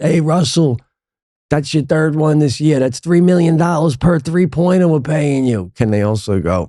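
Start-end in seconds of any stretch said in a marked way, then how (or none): 0.0-5.7 high-pitched, loud yell. Imagining a fan heckling a player at the arena: imitating a fan yelling. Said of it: "someone yells out".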